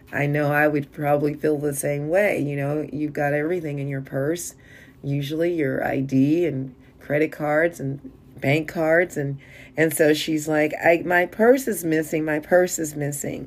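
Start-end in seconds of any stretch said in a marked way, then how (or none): none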